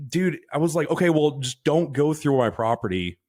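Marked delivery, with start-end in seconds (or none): 0.9-3.1 mock-stern, acted stern voice. Recounting talking to a man searching for someone, retelling a stern warning. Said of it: "in a stern voice and shit".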